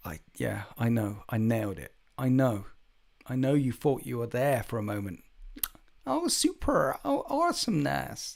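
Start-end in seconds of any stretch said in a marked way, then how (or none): 6.0-8.4 put-on very high, swooping Valley Girl accent. Speaker demonstrates the accent once more, California Valley Girl accent. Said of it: "I could I could act".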